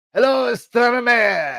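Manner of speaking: very high, sing-song, swooping, bad Italian accent. Retelling how a video opened, in worst italian accent. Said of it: "in my worst Italian accent".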